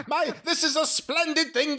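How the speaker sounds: very high, daft, wacky character voice. Explaining the voice he used earlier, wacky OVW owner voice. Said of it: "This like that voice".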